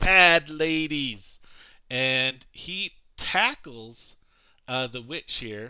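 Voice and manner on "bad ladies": wild, loud, full-throated shrieking scream. Voicing a creature charging across a ledge: screaming at the top of his lungs. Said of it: "he's screaming at the top of his lungs".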